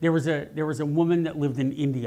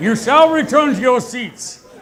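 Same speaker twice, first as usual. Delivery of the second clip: very loud thundering booming god-like voice; 11 semitones higher, 12 dB louder than usual. Calling the audience back to their seats after his mic was turned up; booming voice of God. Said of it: "booming voice of God".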